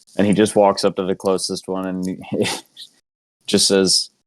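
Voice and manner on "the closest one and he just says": normal talking voice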